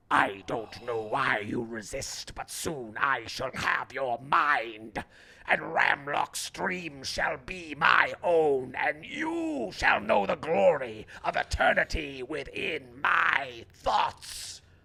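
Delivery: harsh, grating, abrasive voice. A voice echoes in all the listeners' minds, grating voice. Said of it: "A grating voice echoes in all of your minds".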